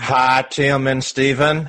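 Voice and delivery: put-on light Texan accent. Reading a listener's question aloud on the podcast in a Trevor voice, slight Texan twang. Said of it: "kind of sound like Trevor's in Texas".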